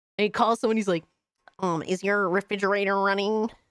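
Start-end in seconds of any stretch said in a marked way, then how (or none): 1.6-3.5 put-on cartoon frog puppet voice. Retelling a meme where a frog prank-calls someone: imitating Kermit the Frog. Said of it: "Kermit the Frog is, like, doing, like, prank calls".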